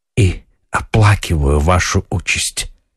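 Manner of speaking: plain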